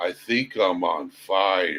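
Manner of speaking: hushed, very slow, spaced-out stoned drawl, "fire" stretched out. Retelling what a stoned man said while looking at the speaker, imitating him stoned. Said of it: "he's so stoned that he looks at me".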